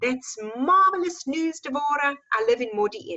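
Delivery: put-on Afrikaans-accented speech. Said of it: "strong, um, um, Afrikaans accent".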